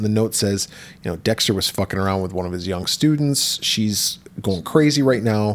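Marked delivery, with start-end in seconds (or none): none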